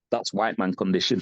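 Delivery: hushed stage whisper. Retelling what a trophy presenter said on stage: imitating a half-whisper. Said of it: "he whispered in my ear".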